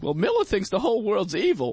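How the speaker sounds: put-on old-timey voice, high and swooping. Retelling a friend's remark in conversation, doing an old-timey Mark impression. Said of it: "Is that your Mark impression? sounds like he's from like the 1920s".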